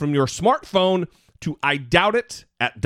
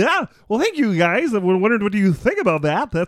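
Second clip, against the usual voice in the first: weird hollow voice, higher pitch; 5 semitones higher than usual. Imitating the man in the short message, in a hollow Kermit the Frog voice. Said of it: "like a hollow sounding".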